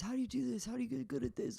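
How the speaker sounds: much younger-sounding voice, high and creaky. Imitating a younger self asking for comedy tips. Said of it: "That's my impression of me nine years ago".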